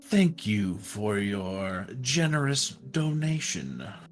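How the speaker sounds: great dragon character voice. Narrating a fantasy scene, voicing the green dragon as it leans down to speak. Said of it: "It leans down and it says in common".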